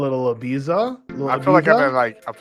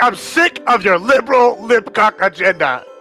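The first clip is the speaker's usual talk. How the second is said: pretend angry shouting; 8 semitones higher, 5 dB louder than usual. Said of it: "yelling, and there's gonna be fucking rock".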